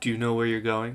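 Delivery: expressionless, flat, level deadpan tone. A game master voices a woman who looks at a player: deadpan tone. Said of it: "says in kind of a like a deadpan tone".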